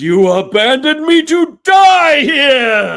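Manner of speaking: booming, thundering voice, very high and very loud. Voicing a magical voice as the room rumbles: booming voice. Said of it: "the thaumaturgy voice booms".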